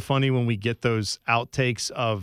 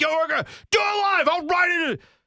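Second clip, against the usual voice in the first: frantic, shrill, very high-pitched screaming. Retelling how a man lost it and screamed at everyone, imitating someone screaming. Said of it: "he's like screaming".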